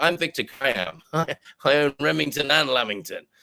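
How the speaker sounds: put-on American accent. Joking about lamingtons and Remington shavers, the speaker poses as the owner in an American accent. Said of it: "I can do other American accents".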